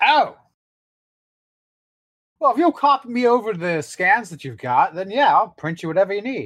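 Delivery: high, gleeful character voice. Voicing Roger, who wanders over to a player at his Faber: Roger voice. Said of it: "he sort of wanders over and goes".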